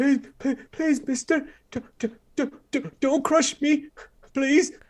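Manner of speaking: very high, trembling, quivering, terrified mumble. Game master voicing a boy pleading with the player's character; terrified boy mumbling. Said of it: "quivering in terror, uh, and he mumbles".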